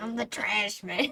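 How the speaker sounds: put-on gruff, comedic voice. Quoting a line after another player mentions an impression: Danny DeVito voice. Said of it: "a Danny DeVito quote impression".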